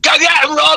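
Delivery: put-on shrill, very high, encouraging cheering shout. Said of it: "he would shout at me".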